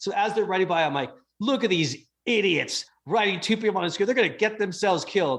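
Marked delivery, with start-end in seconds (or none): 1.4-5.4 put-on, fuming, exasperated ranting, New York accent. Retelling seeing two people ride one scooter: imitating own past rage. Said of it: "I catch myself mid-rage".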